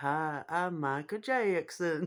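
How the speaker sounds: put-on slow, drawn-out American southern accent. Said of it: "he's got a southern accent".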